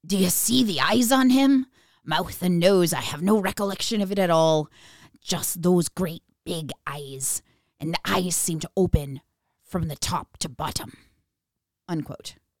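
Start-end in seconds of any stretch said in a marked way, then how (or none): 0.1-10.9 put-on grizzled old sea captain voice. Reading out a quoted account to a co-host, in a sea captain voice. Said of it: "that is the sea captain voice".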